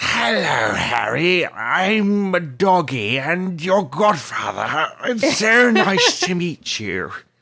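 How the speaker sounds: put-on high, very slow drunk drawl, stretched "I'm". Imitating an audiobook narrator's voice for Sirius: imitating Jim Dale's drunk-sounding Sirius. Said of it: "Sirius just kinda sounds drunk all the time".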